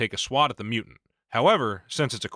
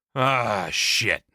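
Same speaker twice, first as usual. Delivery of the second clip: words let out on a sigh. Narrating a game as the slugger reacts to the failed roll, sighing. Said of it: "sighs the slugger".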